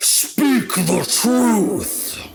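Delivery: put-on old woman's high voice echoing through the room. Voicing a warped old woman leaning from her throne: echoing voice filling the room. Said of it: "this voice just echoes across the entire room".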